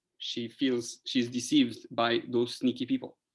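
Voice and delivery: ordinary talk, nothing marked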